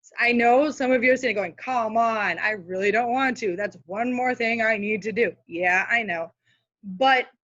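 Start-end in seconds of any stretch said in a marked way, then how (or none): none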